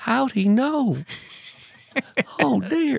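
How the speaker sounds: put-on high-pitched voice with Southern accent. Talking to listeners, a host imagines Jimmy Carter's reaction: Jimmy Carter Southern accent. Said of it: "who can't do a Southern accent".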